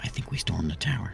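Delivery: whispering. Player's character speaking while another character outside overhears, whispering. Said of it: "I'm whispering".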